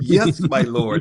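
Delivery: put-on English accent, high and loud. Retelling a car assistant's reply to a request: English accent. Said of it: "Could you say it with an English accent?".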